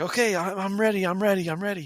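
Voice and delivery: put-on eager excitement. Retelling a buddy's wife agreeing to try for the stage: imitating someone excitedly eager. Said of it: "she's all excited about it".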